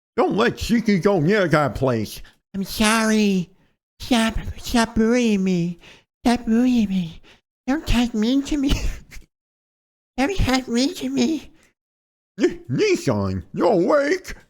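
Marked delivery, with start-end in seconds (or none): 12.4-14.4 bad fake British accent, much higher, slower. Voicing a female character he gave a stupid voice: bad attempt at British accent. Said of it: "I think it was supposed to be British".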